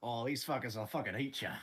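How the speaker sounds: full-on outback croc-hunter bushman hero voice. Talking about territorial lizards: Crocodile Dundee voice. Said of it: "full Crocodile Dundee mode".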